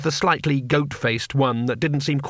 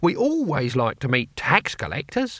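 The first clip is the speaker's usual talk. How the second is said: usual speaking voice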